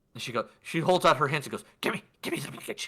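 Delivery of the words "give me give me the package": breathy, hushed put-on goblin woman voice. Narrating a scene to players, speaking as a goblin woman in a goblin woman voice. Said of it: "you see a goblin woman".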